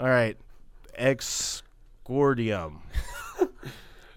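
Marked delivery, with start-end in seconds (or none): 1.0-2.8 very slow, drawn-out words. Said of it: "Little off on that one".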